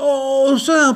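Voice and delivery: very high, loud protesting cry. A bear protests when a mouse points to a do-not-disturb sign. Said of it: "protesta l'ours".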